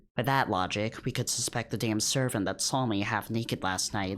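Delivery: ordinary delivery, nothing marked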